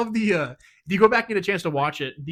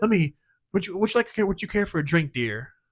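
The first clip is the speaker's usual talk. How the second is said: put-on seductive android voice. Retelling how an android character woos a woman, imitating Data's sensual wooing voice. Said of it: "a very sexual, sensual way".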